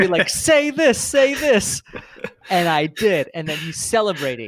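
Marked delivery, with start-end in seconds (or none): 0.3-1.8 mock yell, higher and louder. Retelling how someone yelled at a webinar on TV: imitating Matt yelling at the TV. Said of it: "yelling at it".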